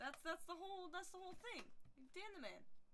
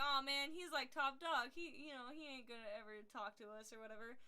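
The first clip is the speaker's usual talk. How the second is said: plain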